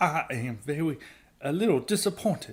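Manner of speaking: gentle, campy Southern drawl. The speaker mocks how a character in a show talks; feminine Foghorn Leghorn accent. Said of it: "a more feminine version".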